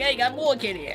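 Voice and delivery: grumbly put-on New York accent. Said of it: "grumble your voice and you gotta speak like you're from New York".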